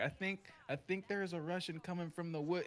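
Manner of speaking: stammering over opening words. Retelling a teammate's radio call about Russians coming: imitating someone stuttering. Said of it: "He was, like, stuttering".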